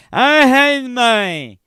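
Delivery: put-on very high, very loud drunken outburst. Retelling what a drunk man told a deputy: imitating a drunk man. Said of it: "I'm sure it sounded more like this".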